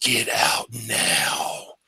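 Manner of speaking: loud, breathy, audible stage whisper. Describing a voice heard in the ear after finding a trap door, in a loud whisper. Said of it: "It's kind of like a loud whisper".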